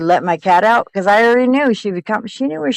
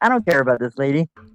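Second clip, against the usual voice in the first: cool, unbothered, totally-over-it cat voice; 6 semitones lower, 4 dB quieter than usual. Joking about what a missing cat thinks, voicing the cat. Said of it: "Your cat's like".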